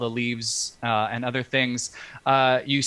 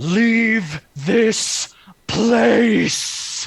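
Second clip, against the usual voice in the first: very high, booming, commanding shout; 10 semitones higher, 7 dB louder than usual. Game master voicing the Dean of Order calling out, Augusta's booming, commanding voice. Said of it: "with that booming, commanding voice".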